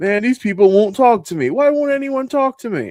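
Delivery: very high, hurt sulky whine. Describing a clip where a man keeps getting doors slammed in his face: imitating hurt complaining. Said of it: "he's all hurt about it".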